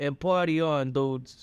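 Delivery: fake Italian mobster accent. Improvising a scene with a co-host, in an italian mobster accent. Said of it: "let's do it with in Italian mobster accents".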